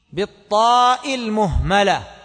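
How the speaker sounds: ordinary delivery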